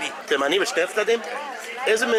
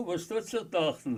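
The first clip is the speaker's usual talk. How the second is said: play-acted proud delivery, spoken in Yiddish; 3 semitones lower, 8 dB quieter than usual. Retelling what he said in yiddish to two men, retelling a proud remark. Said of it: "in some proud way".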